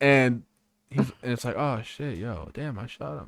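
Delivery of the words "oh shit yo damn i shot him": mock-unconcerned tone, quieter and slower. Retelling how a shooter reacted after shooting someone, mock-unconcerned. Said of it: "that concerned".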